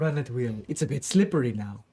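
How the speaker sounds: low-pitched character voice. Voicing Cyril, who runs over after a player falls: Cyril character voice. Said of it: "he throws a gangplank down and says".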